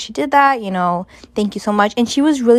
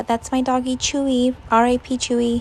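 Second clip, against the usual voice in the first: normal talking voice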